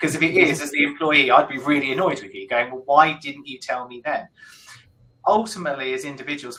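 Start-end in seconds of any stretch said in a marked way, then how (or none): none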